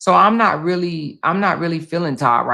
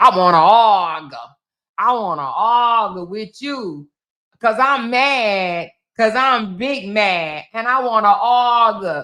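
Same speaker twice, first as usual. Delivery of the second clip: slow, drawn-out mocking voice, angry and combative; 4 semitones higher than usual. Mocking people who want to fight, imitating someone eager to argue: mocking imitation of an angry arguer.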